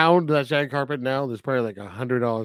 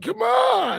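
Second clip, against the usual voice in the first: very high, fed-up, frustrated shout. Describing a businessman who just missed his train, retelling a frustrated yell. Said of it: "he's like yelling like".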